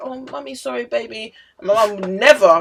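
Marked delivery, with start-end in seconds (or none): 0.0-1.3 gentle, soft, high, motherly, apologetic voice. Retelling how an aunt apologized to her girls after slapping them: imitating an aunt apologizing. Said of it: "one of my aunts used to be like".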